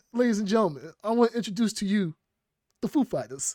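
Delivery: high-pitched showman announcer voice, like a stage host. Quoting a line from Saturday Night Live: Christopher Walken impression. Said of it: "He's like".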